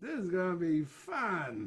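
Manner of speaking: slow, intoxicated drawl with fun stretched out. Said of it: "he kinda talked a little like [name]".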